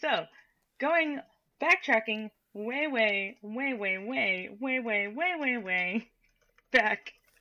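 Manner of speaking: drawn-out "way way way back".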